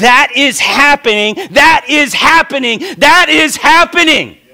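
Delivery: shrill, repeated, very high, loud yelling. Preaching that an old prophecy is now coming true: yelling. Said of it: "Why are you yelling?".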